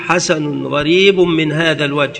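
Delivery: plain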